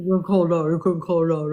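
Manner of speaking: mimicking, mocking voice. Repeating the other speaker's words back to them: mocking imitation of the other speaker. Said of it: "That's what you sound like".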